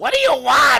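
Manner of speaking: shrill, very high, very loud screaming at full volume. Retelling an old radio skit, Yolanda answers: imitating Yolanda screaming.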